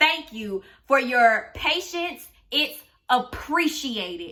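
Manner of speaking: slow, dripping sarcasm with fake, sarcastic politeness. Retelling an earlier text sent to a boss when fed up: imitating own sarcastic thanks. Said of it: "I was being sarcastic as hell".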